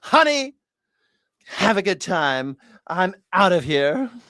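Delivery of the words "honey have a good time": dismissive, sassy diva-style delivery. Mocking the president's sign-off again: mocking a diva tone. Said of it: "This diva".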